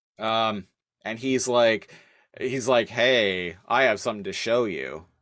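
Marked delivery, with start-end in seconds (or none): 2.9-5.0 menacing delivery. Retelling a show scene where a boy asks a girl: imitating an ominous line. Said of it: "very ominously".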